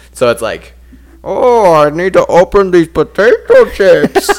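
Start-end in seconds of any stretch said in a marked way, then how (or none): 1.3-4.3 very loud, slow, menacing villain voice. Retelling a cartoon's version of the Dark Knight Rises Bane: Bane voice. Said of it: "he just does that throughout the whole show".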